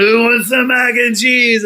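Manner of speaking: high, rowdy, mock hollered yell. Recalling friends, stuffed full, shouting an offer of leftovers: retelling a yell. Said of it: "we just started yelling".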